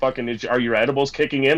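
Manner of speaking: ordinary talk, nothing marked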